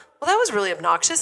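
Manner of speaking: normal talking voice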